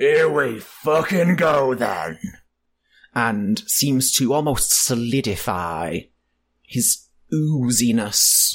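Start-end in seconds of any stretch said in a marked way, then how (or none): 0.0-2.2 bellowing slime creature monster voice. Narrator voicing Sludgeus as he strikes the bass in the arena, bellowing. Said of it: "Sludgeus bellows".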